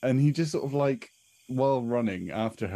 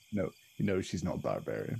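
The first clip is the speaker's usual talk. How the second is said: normal talking voice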